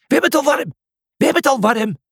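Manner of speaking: shrill, very high-pitched shrieking cry. Reading a story, a character screams while running across the field with the others. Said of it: "Cornelius gilde".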